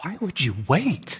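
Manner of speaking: soft, puzzled, incredulous, baffled voice. Retelling his wife's reply to a woman who delayed repenting, baffled voice. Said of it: "in a baffled voice".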